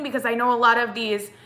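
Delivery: ordinary talk, nothing marked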